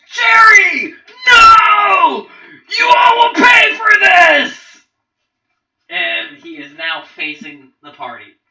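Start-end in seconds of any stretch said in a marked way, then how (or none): 0.2-4.9 furious creature wail, very high, shrill, very loud. Voicing a hobgoblin who pulls an arrow from a fallen ally: hobgoblin voice, enraged cry. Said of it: "and says".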